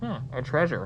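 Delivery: muffled sound. Showing how a co-op friend would hear the game line, real muffled. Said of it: "like real muffled".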